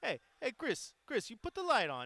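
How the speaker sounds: put-on sing-song Hawaiian pidgin accent. Speaker imitates his grandparents calling to him: hawaiian pidgin accent. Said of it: "Sometimes the Hawaiian accent is a thing".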